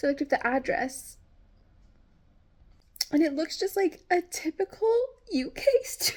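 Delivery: tearful, excited happy crying, very high pitch. Describing the Airbnb address they looked up, while happy crying. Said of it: "I'm crying because I'm so excited".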